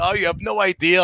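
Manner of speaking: mock high-pitched hollering. Retelling own reaction during a show: imitating own yelling. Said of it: "I'm, like, yelling".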